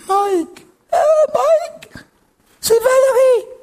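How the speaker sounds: high, small, breaking voice. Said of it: "Avec une petite voix cassée".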